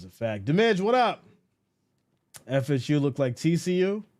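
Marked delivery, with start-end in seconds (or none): none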